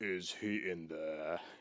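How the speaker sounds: very deep voice kept soft and hushed. Retelling a voice heard through an opening door, in a low Darth Vader-like voice. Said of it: "I hear this low, low voice".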